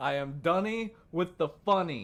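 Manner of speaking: loud, very clear, slow and deliberate delivery. Showing how to announce that the joke is over: loudest, clearest voice. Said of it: "in your clearest, loudest voice".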